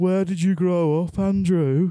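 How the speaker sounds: Birmingham accent. An interviewer asks guest Andrew where he grew up, in a put-on Birmingham accent. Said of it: "I just did that, that accent".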